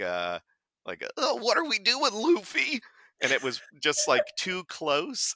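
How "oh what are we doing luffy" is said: put-on cartoonish stoner voice. Recalling an audition line addressed to Luffy, in a Shaggy voice. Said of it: "think like Shaggy from Scooby-Doo. ... And so I did like".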